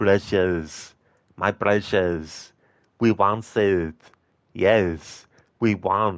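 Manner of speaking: ugly voice, very slow and very drawn out. Reading a chat request aloud, then doing a Gollum impression. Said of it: "That was my Gollum impression".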